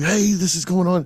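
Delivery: mock eager, all-excited, high-pitched voice. Retelling calling his wife with news: imitating own excited call. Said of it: "I'm all excited".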